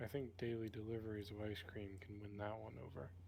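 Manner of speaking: low, quiet whisper. Whispering to Devonius during a scene: low whisper. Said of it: "in a low whisper".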